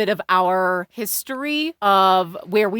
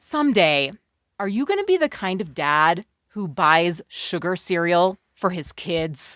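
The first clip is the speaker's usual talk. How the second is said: scornful tone dripping with disdain; 4 semitones lower than usual. Retelling asking a partner in a cereal aisle: retelling a disdainful question. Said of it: "I said it with just disdain dripping off of my voice".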